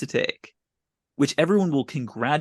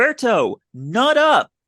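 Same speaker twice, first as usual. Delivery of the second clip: shrill, loud yelling at full force; 8 semitones higher, 7 dB louder than usual. Recapping a favorite scene, quoting one character yelling at another, retelling a yell. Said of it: "Sam yells".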